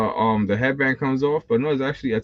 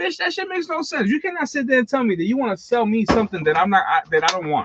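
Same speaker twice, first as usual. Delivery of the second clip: mock furious, heated rant, pitched very high; 9 semitones higher than usual. Retelling an argument with a store worker over figures: retelling own angry argument. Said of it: "I got into a big argument with Walmart".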